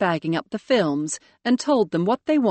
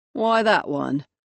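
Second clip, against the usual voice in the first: flat, bored, uninterested-sounding voice. Narrator reading Jimmy's question to Ray about the case she found, bored voice. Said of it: "Jimmy said in a bored voice".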